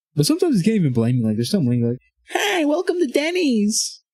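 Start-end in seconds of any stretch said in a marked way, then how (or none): 2.3-4.0 put-on wacky crazy voice, very high, very slow, drawn-out. Explaining why they couldn't help laughing, the speaker imitates a crazy voice. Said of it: "It's like this crazy voice".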